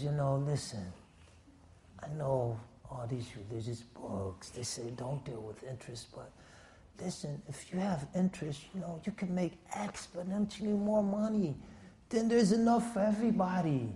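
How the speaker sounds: murmuring softly, close in.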